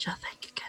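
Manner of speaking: whispering. Voicing a character who stands up quietly after noticing something: whisper. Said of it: "she'll kind of stand up really quietly and just whisper".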